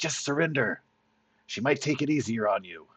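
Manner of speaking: hissing, threatening tone. Voicing a character with blades out urging surrender: hissing. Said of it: "he's still hissing at you like".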